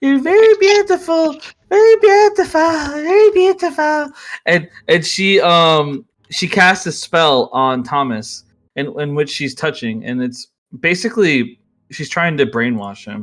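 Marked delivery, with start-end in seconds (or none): 0.0-4.1 put-on very high, shrill, lisping old lady voice. Voicing a spellcaster in a game as she charms Thomas, old lady with retainer teeth. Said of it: "she sounds like an old lady with like a retainer teeth".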